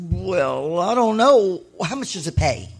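ordinary talk

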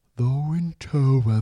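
put-on old-person talking voice, like an old politician. Introducing the winter topic in a Margaret Thatcher voice. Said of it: "That was my Margaret Thatcher".

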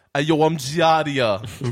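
put-on reality show cast voice. Joking that a word sounds like a name from Jersey Shore: Jersey Shore cast member voice. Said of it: "It sounds like a cast member from Jersey Shore".

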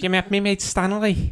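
put-on Scouse Liverpool accent. Asked to repeat a quote in a Scouse accent: Scouse accent. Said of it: "Can you do a Scouse accent and say that?".

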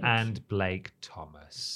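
robotic machine readout, low, soft robot voice. Reading out the podcast producers' names on the show, in a robot voice. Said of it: "Why did you sound like a robot?".

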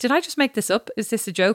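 put-on, genuinely earnest, dead serious, no-joke tone. Retelling a woman in a bathroom asking, imitating a dead serious question. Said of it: "And she was dead serious".

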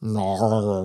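Australian "no" swallowed into drawn-out "nar". Explaining how Australians say no, mock Australian accent 'nar'. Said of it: "They say nar".

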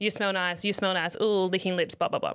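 normal talking voice

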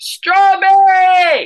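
very high, shrill yell from far off. Describing a drink's taste by acting out someone yelling from another room. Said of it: "yelling the name of a fruit".

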